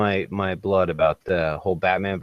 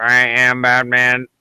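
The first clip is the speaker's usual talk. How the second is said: robotic electrolarynx-style voice, higher; 4 semitones higher, 6 dB louder than usual. Imagining Batman testing his voice while building the costume: Batman through an electrolarynx. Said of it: "hitting one of those little tracheotomy boxes".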